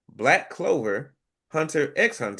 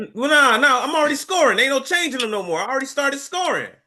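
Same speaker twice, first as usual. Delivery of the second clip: shrill, very high, loud yelling; 11 semitones higher, 6 dB louder than usual. Refusing a change of guesses because scoring already started: yelling. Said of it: "You don't have to yell at me".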